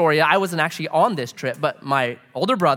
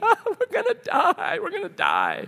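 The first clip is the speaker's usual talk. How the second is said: put-on scream, much higher pitch, slower; 3 dB quieter than usual. Recounting the little brother's reaction while dragged through the cave, imitating someone screaming. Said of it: "like screaming".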